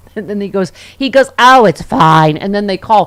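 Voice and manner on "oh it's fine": loud, condescending, patronizing, talking-down tone. Retelling a commercial where a man dismisses a worried woman: imitating a patronizing tone. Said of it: "He took a tone".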